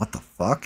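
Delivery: whispered mutter out of the side of the mouth. Retelling what a buddy said at the bar: imitating Bones side-mouthing. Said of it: "side-mouthing it".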